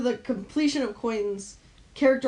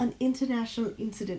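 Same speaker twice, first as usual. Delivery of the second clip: put-on British accent; 5 dB quieter than usual. Repeating a phrase because the other speaker asked: British accent. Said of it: "Say it in, like, a British accent".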